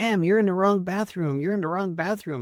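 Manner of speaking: acted-out, alarmed, frantic, panicked, freaked-out voice. Retelling a man in a gas station men's room: imitating a man freaking out. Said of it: "he was, like, freaking out".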